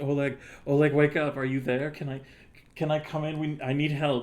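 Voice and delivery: calling out loudly, pitched high. Voicing a character knocking at a door and asking for help: quiet calling. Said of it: "just quietly".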